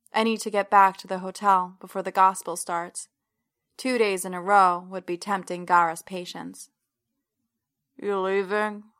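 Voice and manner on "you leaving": muffled, muted, gravelly mumble. Reading a man's line from bed as the narrator dresses to leave, gravelly, muted. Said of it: "His voice is gravelly and muted, spoken half into the pillow".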